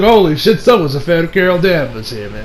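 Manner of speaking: ordinary delivery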